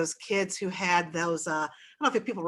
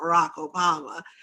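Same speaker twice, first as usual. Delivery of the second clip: hoarse, croaking, raspy voice; 4 dB louder than usual. Retelling what a bedridden father said, imitating a croaky voice. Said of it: "in this croaky voice".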